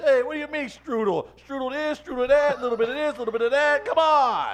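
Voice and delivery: put-on angry New York accent. Playing a New Yorker arguing about strudel: put-on angry New Yorker. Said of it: "Why is your face so angry when you do that?".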